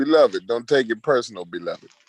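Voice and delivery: put-on comic-strip cartoon cat voice with Jamaican accent. Telling another speaker not to take it personal: Garfield voice. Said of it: "I gotta hit you with my Garfield voice".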